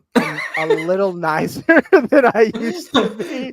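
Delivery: slow delivery, laughing through the words.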